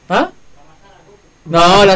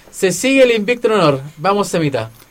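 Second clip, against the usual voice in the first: normal talking voice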